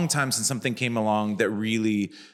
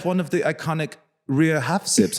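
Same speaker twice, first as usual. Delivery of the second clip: put-on German accent, higher pitched; 7 semitones higher than usual. Retelling what a stranger said at a hotel: imitating a German accent. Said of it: "a German accent".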